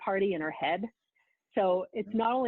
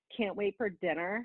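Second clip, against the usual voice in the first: mock nasty mean-girl voice; 3 dB quieter than usual. Speaker retells a mean girl showing up between lunch and dinner, imitating a nasty mean girl. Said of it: "the mean girl like shows up and she's like".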